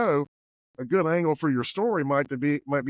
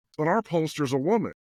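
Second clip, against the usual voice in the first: matter-of-fact, completely earnest, deadpan serious delivery. Retelling what a woman answered him about polls, retelling a deadpan serious reply. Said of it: "deadpan serious".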